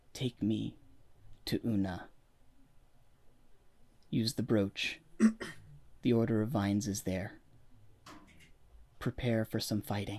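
very low, hushed, barely audible delivery. Voicing a very sick woman addressing three listeners, speaking very low. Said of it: "She's speaking really low".

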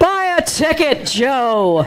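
booming, divine-sounding voice. Telling a story about Joe's prayer for a lottery win, booming voice of God. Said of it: "hears the booming voice of God say".

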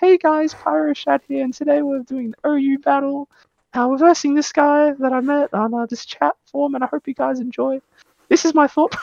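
put-on squeaky, very high childish baby voice. Recalling the intro to early battle videos: baby voice. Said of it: "I was with my baby voice".

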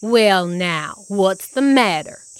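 growling voice. Narrator reading a character's line to a rabbit figure, growling. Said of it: "He growled".

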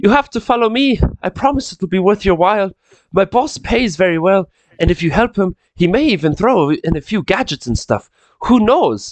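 put-on very terrible Irish accent. A DM gives a game character a new voice: very terrible Irish accent. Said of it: "I'm doing a very terrible Irish accent".

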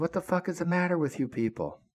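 acted-out high angry yell. Recounting yelling up at the captain and the xo, retelling a yell. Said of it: "So I yelled up at the captain and the XO".

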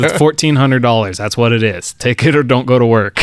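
ordinary delivery

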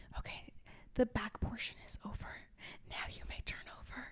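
very soft, hushed, close whisper. Retelling what a man kept whispering: imitating someone whispering. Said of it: "you don't have to whisper in my ear".

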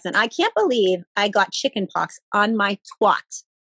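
put-on sweet, cute little New York accent. Retelling what a woman said after hearing what she had: adorable New York accent. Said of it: "with this adorable New York accent".

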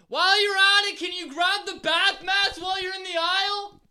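high, loud calling out. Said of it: "you're on the other side".

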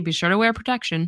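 mock-dry, deadpan delivery. Recapping favorite jokes, quoting someone's reply to a friend, said dryly. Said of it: "just said dryly".

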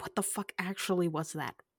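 hushed whisper under the breath. Voicing a character who whispers to another character during a romantic moment: whispering. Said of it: "I'm whispering to Betty".

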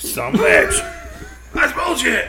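high mock outrage, laughing through it.

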